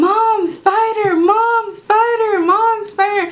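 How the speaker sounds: very high, loud, drawn-out scream. Retelling seeing a spider and calling for mom: imitating screaming for mom. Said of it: "I start screaming to my mom".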